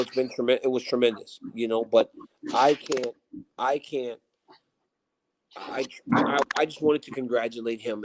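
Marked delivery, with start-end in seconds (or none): none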